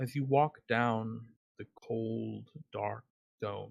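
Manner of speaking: slow, level, flat monotone delivery. Showing how to narrate a horror adventure: monotone horror narration. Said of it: "in the horror adventure, you talk more in a monotone".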